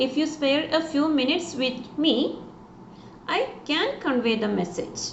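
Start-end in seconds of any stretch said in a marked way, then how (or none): none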